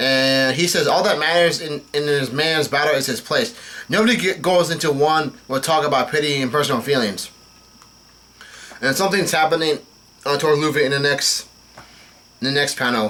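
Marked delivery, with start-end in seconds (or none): none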